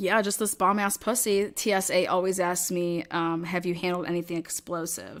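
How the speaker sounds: ordinary delivery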